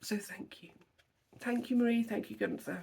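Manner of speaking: tearful, choked up, near tears. Thanking marie and gunther for something unaffordable, about to cry again: choked up, near tears. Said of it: "I'm going to cry again".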